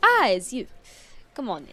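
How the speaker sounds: put-on loud, swooping character accent, thrown on big. Voicing the half-orc professor greeting a visitor at her door: Calliope's accent. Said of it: "I wouldn't do Calliope's accent on stream".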